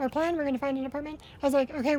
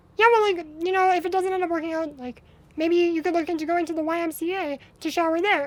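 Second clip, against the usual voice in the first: put-on sunny, breezy, cheerful, upbeat, helpful tone; 2 semitones higher than usual. Retelling a therapist's suggestion to another speaker: imitating a cheerful happy tone. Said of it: "a smile on her face and, like, so happy".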